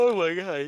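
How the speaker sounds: yawning while talking. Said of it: "just as I'm yawning".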